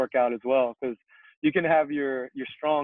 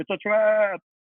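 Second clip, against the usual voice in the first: fish-like alien voice, pitched up; 8 semitones higher, 3 dB louder than usual. Describing a Star Wars clip, imitating the fish-looking guy. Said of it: "the fish looking guy".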